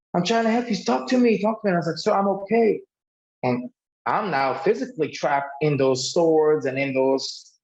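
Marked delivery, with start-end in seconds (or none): 0.1-1.7 desperate, frantic, high, pleading screaming. Recounting a man who tackled the car to reach them, retelling a man's screaming. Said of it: "And he's just screaming".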